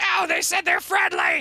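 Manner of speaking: very high, shrill shouting. Narrating a scene, voicing Hot as he yells at the people running around, Hot yelling. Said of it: "Hot's like yelling at at them like".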